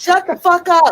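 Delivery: shrill, full-throated, very loud, high-pitched hollering. Retelling hollering in her sleep at arguing voices: imitating herself hollering. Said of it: "I be hollering in my dream".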